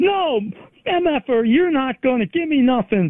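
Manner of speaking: put-on high screaming like a maniac. Recounting a man who stepped in and shut the door, imitating someone screaming. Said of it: "starts screaming like".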